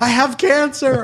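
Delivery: loud high-pitched scream. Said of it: "like, screaming".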